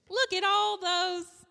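very high, very loud, shrill, drawn-out meme voice. Quoting a Vine line after being asked to do the voice: imitating the Vine video voice. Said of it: "I'll do it in the voice".

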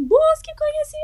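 very high, thin, dopey simpleton alien voice. Speaker imitates how an alien would talk on tv record, in a dopey thin voice. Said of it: "com aquela voz de sonso que ele fala assim".

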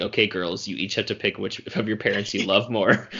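ordinary delivery

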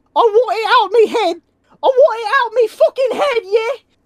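panicked, yelped-out words. A player's character wakes up pawing at his head: screaming. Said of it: "while I am screaming, I am saying".

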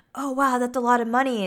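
sudden, abrupt switch to a delighted tone. Retelling a woman's reaction after a man says what the job pays; retelling a sudden happy switch. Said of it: "And she's like all happy again".

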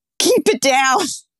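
play-acted restrained half yell. Telling a listener how she yelled at the noisy mice, retelling a yell. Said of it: "I yelled".

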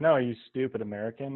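ordinary delivery

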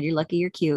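plain

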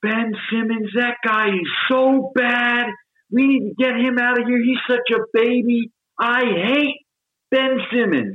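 play-acted yelling rant, very high, drawn-out. Retelling how a man leaned out his apartment window and started yelling: retelling a man yelling. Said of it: "He's just yelling about Ben Simmons".

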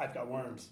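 put-on sudden, abrupt blurt. Retelling a character suddenly blurting a line: imitating a sudden blurt. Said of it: "he just, like, blurts out".

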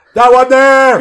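very loud, shrill, high-pitched yell. Pretending to be in a library, demanding a book: acting a yell. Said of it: "why do you sound like that?".

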